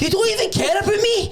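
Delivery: very high, whiny mock voice.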